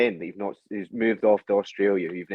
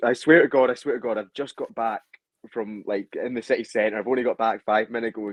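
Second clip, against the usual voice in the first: usual speaking voice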